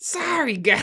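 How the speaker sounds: very high, loud, whiny, gruff voice. Another try at the gruff, whiny Eddie voice. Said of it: "I can't do that".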